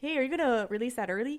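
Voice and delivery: put-on casual Canadian accent. Retelling a phone call, redoing the caller's question on request; canadian accent. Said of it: "please do that with a Canadian accent?".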